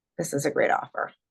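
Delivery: level, flat, disinterested, bored monotone. Showing how a level tone sounds disinterested: flat, bored tone. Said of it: "your level tone can indicate that you're disinterested or bored".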